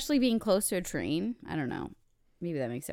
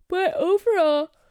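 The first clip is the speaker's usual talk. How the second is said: yawning speech, higher and louder; 10 semitones higher, 10 dB louder than usual. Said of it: "I'm yawning".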